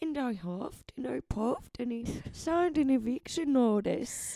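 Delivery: high, storybook cartoon pig voice. Imitating a date's voice, said to sound like the Shrek pigs: imitating Tom like the Shrek pigs. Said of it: "He talks like the three pigs from Shrek".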